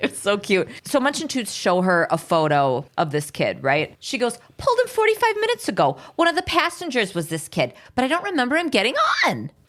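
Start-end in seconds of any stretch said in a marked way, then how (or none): 4.6-9.4 squeaky put-on New York accent, swooping pitch. Retelling what the bus driver says in the episode: squeaky New Yorkie voice. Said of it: "squeaky at the end, New Yorkie voice".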